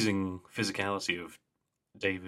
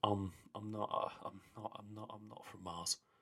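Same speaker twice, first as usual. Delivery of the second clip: put-on tired voice, much quieter and slower; 13 dB quieter than usual. Retelling a scene where someone runs off, imitating David's tired, weird delivery. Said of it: "David really tiredly and weirdly just goes".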